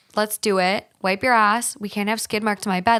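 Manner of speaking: ordinary talk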